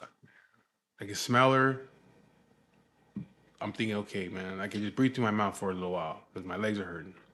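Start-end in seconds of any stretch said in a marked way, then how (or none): none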